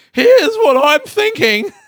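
voice cracking upward in pitch. Speaker describing their thinking about an Instagram message, voice cracking. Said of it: "yeah my voice just broke".

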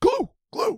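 very high, strained voice cracking and breaking apart. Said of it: "my voice is gone".

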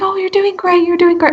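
sweet, high cheering tone. Imagining Gordon Ramsay encouraging a mother in labor: Gordon Ramsay, super sweet. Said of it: "super sweet and considerate".

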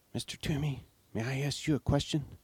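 soft, hushed whisper under the breath. After a long silence, a character asks the woodcarver a question: whispered. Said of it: "cleared his throat and whispered".

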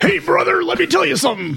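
exaggerated gravelly voice, pitched very high. Prompted to do Macho Man on the podcast, speaking in Macho Man voice. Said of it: "Do Macho Man".

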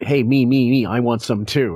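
play-acted begging, pleading tone. Retelling a home movie moment, imitating Howard begging. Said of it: "he's, like, begging".

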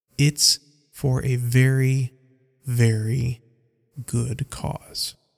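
very slow, deliberate, drawn-out, stretched delivery. Reading a story, a character stressing his cause: speaking very slowly. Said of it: "Mork speaks very slowly".

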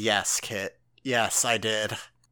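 put-on stern, slow, deliberate delivery. Imagining the author answering a complaint: imitating Kubo sternly. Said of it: "Kubo just looks at me sternly and he says".

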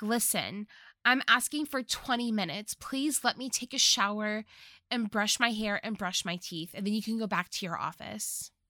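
normal talking voice

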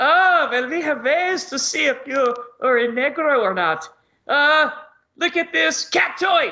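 put-on German soldier accent. Retelling a comedy sketch where soldiers fake accents: imitating a fake German accent. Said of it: "They try to talk with that German accent".

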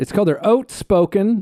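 very Canadian accent and pronunciation. Introducing a beer from a Vancouver brewery, the speaker says its name in a Canadian accent. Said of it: "I said that so Canadian".

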